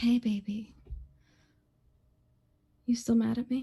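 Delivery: very gentle, kindly, tender voice. Narrating a scene, voicing her line to him in a gentle voice. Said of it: "in like a very kind of gentle voice".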